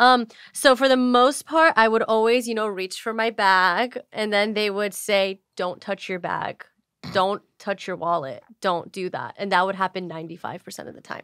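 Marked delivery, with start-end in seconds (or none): 5.5-9.3 put-on firm, forceful, intense, insistent tone. Retelling what dates said when reaching for the bag: imitating an intense demand. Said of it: "they would say it with that intensity?".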